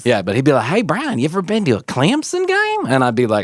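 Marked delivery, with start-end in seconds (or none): 0.7-2.9 goofy, high, sing-song put-on drawl. Retelling what a Clemson-fan coworker used to ask: imitating a coworker's funny voice. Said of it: "if I said the name and then I did the voice".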